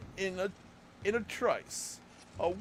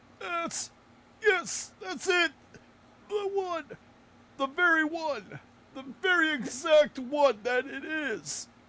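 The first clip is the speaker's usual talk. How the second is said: put-on old man voice, loud and pitched up; 5 semitones higher, 5 dB louder than usual. Retelling recognizing something right away: old man voice. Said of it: "your old man voice".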